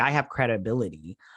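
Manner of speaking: ordinary delivery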